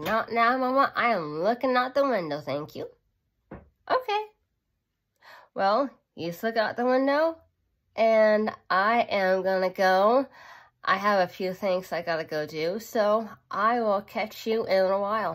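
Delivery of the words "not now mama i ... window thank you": speaking aloud in a pet voice. Speaking for the pet who is looking out the window: voicing the pet Nico. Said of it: "He's like".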